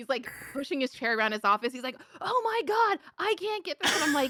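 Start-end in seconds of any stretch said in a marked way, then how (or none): 2.2-3.9 mock very high-pitched raging screamed outburst. Retelling how Badgie raged at his desk, imitating Badgie screaming. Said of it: "he's screaming".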